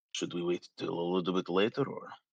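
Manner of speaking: muttering quietly under breath. Voicing a character speaking to Nora: under his breath. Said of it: "kinda say under his breath to Nora".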